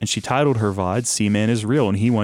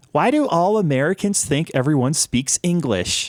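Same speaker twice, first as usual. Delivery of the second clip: put-on high, tiny, babyish voice; 6 semitones higher than usual. Retelling the Seaman character's reply to the audience: imitating a little baby voice. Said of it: "Seaman replies in his little baby voice".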